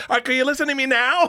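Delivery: very high put-on voice, pushed up into a squeak. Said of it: "He's got a voice".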